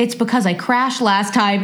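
ordinary delivery

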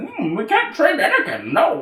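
very high, smug, preachy voice with swooping pitch. Complaining that the character is smug, imitating Yoda. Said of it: "he's like".

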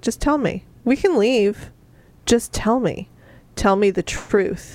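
put-on quiet, subtly threatening brutish voice. Retelling a book character's calm demand for the truth: imitating a quiet, subtly threatening brute. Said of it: "just very quietly".

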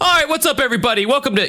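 shrill yelling at a very high pitch. A host mimics the opening he used to do, mock yelling intro. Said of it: "I'm trying to not yell".

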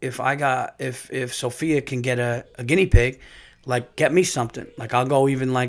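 ordinary talk, nothing marked

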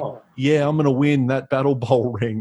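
put-on bland, flat, plain everyday American accent. Quoting how he talked back then, in a bland normal american accent. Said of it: "he just spoke with his normal American accent, which makes it even more bland".

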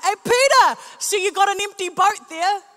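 very loud, high-pitched, booming shout. Retelling a story, acting out a call to a man with an empty boat: retelling a shout. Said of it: "And Jesus shouts out".

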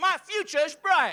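firm, emphatic, sincere-sounding delivery.

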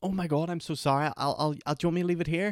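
put-on, high, overly polite, tripping over words. Retelling being told off by a cinema kid over popcorn, mock overly polite apology. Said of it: "but I was overly polite".

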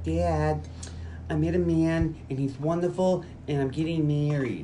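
put-on slow, childlike little girl voice. Retelling a scene where a father pictures his grown daughter speaking, little girl voice. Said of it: "in a little girl voice".

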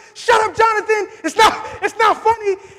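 put-on yelling. Retelling what they yelled in the moment, retelling a yell. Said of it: "I was yelling".

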